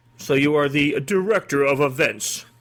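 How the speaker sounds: said ominously. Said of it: "You could say it really ominously like that".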